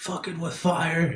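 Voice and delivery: all-out, high, shrieking scream. Declaring an action on their turn against the creature: screaming. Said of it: "I'm just gonna scream".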